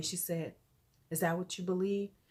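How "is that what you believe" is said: quiet speech, said even quieter. Retelling what a little girl asked after class: imitating someone talking quietly. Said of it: "she's talking really quietly".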